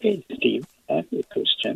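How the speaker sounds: quiet, soft, hushed library voice. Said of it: "Is it possible to speak louder?".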